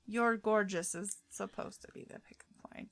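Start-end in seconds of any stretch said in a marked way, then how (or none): none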